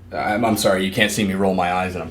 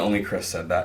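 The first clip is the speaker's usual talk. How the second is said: ordinary delivery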